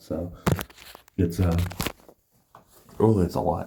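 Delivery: breathy half-whisper with emotion welling up. Talking about being proud to have helped, getting emotional. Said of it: "I'm not trying to get emotional here".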